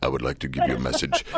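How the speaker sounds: very low, booming voice. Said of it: "Did you like my Darth Vader voice?".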